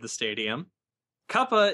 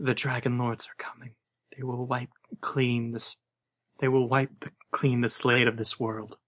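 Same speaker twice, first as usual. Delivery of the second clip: quiet murmuring under her breath. Voicing a character in the game: murmuring under her breath. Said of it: "murmur under her breath".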